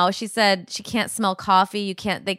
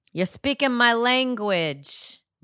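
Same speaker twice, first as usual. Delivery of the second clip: put-on Italian accent; 3 semitones higher than usual. Retelling their own reply to a guy they like, put-on Italian accent.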